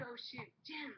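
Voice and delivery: soft, hushed whisper under the breath. Retelling phoning a sleeping friend, retelling a whisper. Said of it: "I'm like whispering".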